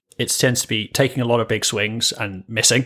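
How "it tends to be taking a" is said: usual speaking voice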